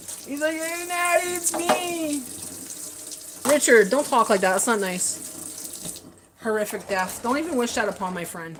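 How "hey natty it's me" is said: put-on drunk voice, slow, high, drawn out. Guessing the early-morning call was a drunk call: imitating a drunk caller. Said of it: "it's probably a drunk call".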